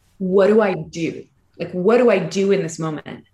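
ordinary talk

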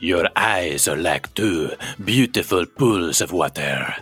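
exaggerated French accent. Trying out Pepe Le Pew for the first time: Pepe Le Pew French accent. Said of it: "I need like a French accent".

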